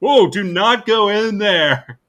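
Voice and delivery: booming, high-pitched, loud, slow, drawn-out delivery. Retelling a movie scene about leaving a bathroom: Ace Ventura voice. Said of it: "He does the, the Ace Ventura thing".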